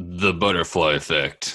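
movie trailer narrator style voice.

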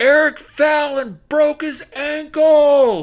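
loud, high-pitched calling out.

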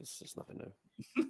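mock-weary, unvoiced, soft, laughing whisper.

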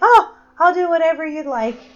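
high, loud eager dog voice. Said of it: "He's just like".

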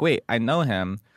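plain

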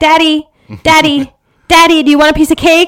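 shrill, high, loud, far-pitched yell. Describing yelling to your dad from the kitchen, imitating someone yelling. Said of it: "you yell to your dad".

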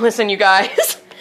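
ordinary delivery

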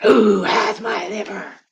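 eerie, booming, high, slow, drawn-out ghost voice. Storyteller voicing a ghost drawing close to Mina: ghost voice. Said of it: "I'm really enjoying the ghost voice".

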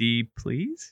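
rising, question-like intonation. Reworking a character's line as a question: rising question intonation. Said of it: "just the question mark".

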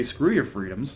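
normal talking voice

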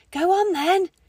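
whisper through gritted teeth. Reading a story aloud, voice a character whispering through gritted teeth. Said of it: "she was whispering through gritted teeth".

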